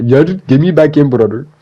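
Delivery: put-on loud Brazilian accent. Speaker imagining Silva seeing the payday check, Silva impression, Brazilian accent. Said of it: "Brazilian accent be damned".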